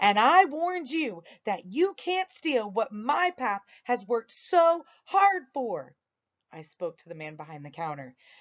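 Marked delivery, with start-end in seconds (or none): 0.0-6.0 loud, high-pitched, raised and firm voice. Narrator reads a character looking a man right in the face; loud voice. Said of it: "said in a loud voice".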